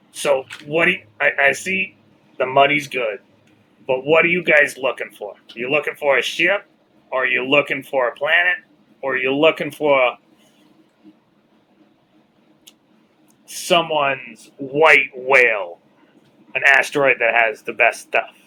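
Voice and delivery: rough, smoke-worn, raspy, hoarse woman's voice. Voicing the Madam as she talks to the group: raspy Madam voice. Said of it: "that one I'll do the raspy voice".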